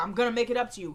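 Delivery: ordinary talk, nothing marked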